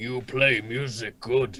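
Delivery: low orc character voice. Voicing an orc who speaks to a player character: orc voice. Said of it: "the orc looks over at".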